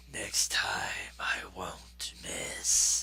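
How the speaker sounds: menacing, threatening whisper spoken up close. Narrating a game, an unseen attacker speaks after missing, menacing voice. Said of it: "you hear a menacing voice near you say".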